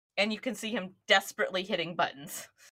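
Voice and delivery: ordinary talk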